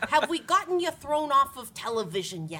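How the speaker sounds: put-on Long Island grandmother voice. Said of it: "he says".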